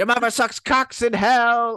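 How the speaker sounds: very high, loud demonic possessed voice. Discussing Regan's scenes, a speaker quotes her possessed line: possessed Regan voice. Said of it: "Oh, unpossessed version".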